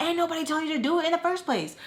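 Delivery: yelled comeback tone. Retelling a friend's retort in an argument: imitating Tommy yelling. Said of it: "And Tommy yells at her".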